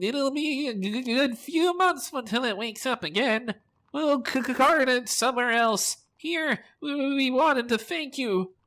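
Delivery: very high-pitched, chattering little gnome voice. Narrator voicing a gnome replying to the players, high-pitched gnome voice. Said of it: "begins to chatter in a high-pitched voice".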